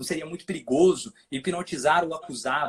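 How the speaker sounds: ordinary talk, nothing marked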